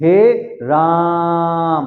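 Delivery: lengthened, stressed, drawn-out राम. Hindi lesson on long vowel marks, showing emphasis: stressed, lengthened राम. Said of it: "हम यहां पर जोर देकर बोल रहे हैं राम को".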